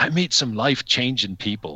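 put-on Irish accent. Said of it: "it's probably the Irish accent".

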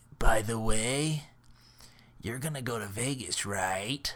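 put-on voice of a longtime smoker. Retelling what a woman seated next to them said, in a smoker's voice. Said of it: "You sound like a smoker".

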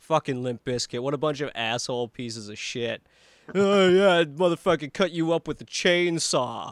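relentless, nonstop mocking rant. Retelling a hidden album track that ridicules a band; retelling a mocking rant. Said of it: "he's like mocking the band relentlessly".

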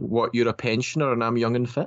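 ordinary delivery

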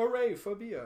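put-on Jamaican accent. On a podcast, voicing people seeing a beer bottle, in a Jamaican accent. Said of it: "that's my Jamaican accent".

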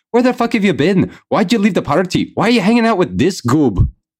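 very high, fretting, worried yell. A player's character confronts a missing party member, yelling like a concerned older brother. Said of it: "I'm just going to start yelling at him like a concerned older brother".

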